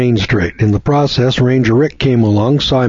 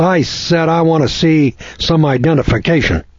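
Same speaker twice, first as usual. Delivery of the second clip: mock ticked-off, angry, boisterous tone; 4 semitones higher than usual. Telling a story, quoting an officer confronting Fred on the sidewalk, retelling a loud, boisterous demand. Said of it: "in a loud, boisterous tone of voice".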